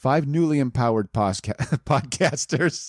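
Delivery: giggling and laughing, stumbling over the words. Reading a story aloud to listeners, laughing while reading. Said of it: "Sorry, I'm laughing".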